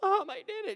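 play-acted, very high, tearful, overjoyed sobbing. Acting out a winning player calling his mom: mock crying with joy. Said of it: "They're crying, tears of joy".

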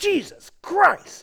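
play-acted, very high, scornful, derogatory outburst. Retelling how a boss swore whenever upset: imitating a derogatory exclamation. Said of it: "in a very derogatory way".

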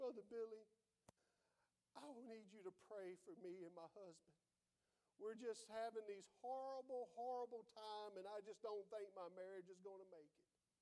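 tearful woman's voice, acted. Retelling a lady asking a preacher to pray: imitating a woman crying. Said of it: "just crying, weeping, just crying".

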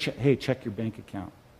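hushed, close, private whisper. Acting out a story where someone whispers in your ear: acting out a whisper. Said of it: "whispers in your ear".

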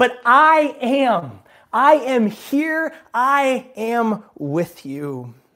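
high, very slow, reassuring shout. Retelling Jesus calling to his disciples in the storm: imitating Jesus shouting. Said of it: "But Jesus is shouting".

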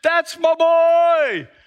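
mock hollering, very high-pitched, shrill and loud. Retelling a kids' soccer game, quoting the boy's dad: imitating a dad yelling. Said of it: "his dad yelling at the top of his lungs".

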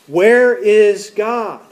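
stern, demanding, firmer voice. Narrator telling a story, the pastor repeating his question to a boy, sterner voice. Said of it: "in a sterner voice".

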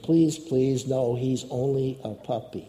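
ordinary talk

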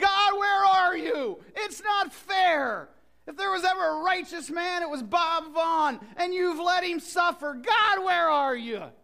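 mock tearful high crying yell, "fair" stretched. Retelling crying out to God leaving the hospital: retelling a tearful yell. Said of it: "I just cried and I yelled".

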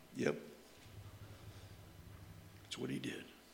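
deep preacher voice, nearly a whisper. Acting out Philip answering the eunuch: deep theological voice. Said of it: "in his deep theological voice".

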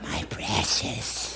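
very quiet, breathy whisper with a possessive tone. Speaker using a Lord of the Rings illustration for an audience, Gollum voice. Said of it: "We're like Gollum on steroids".

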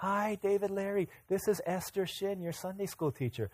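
soft, gentle, polite tone. Retelling a call from a sunday school teacher: imitating a gentle voice. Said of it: "She was just, like, so gentle".

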